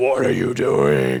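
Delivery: low, growling demon voice. Retelling how Austin sat up in bed and growled at him, demonic voice. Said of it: "growled at me in like a demonic voice".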